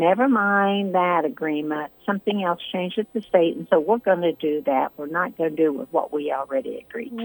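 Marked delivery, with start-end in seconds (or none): none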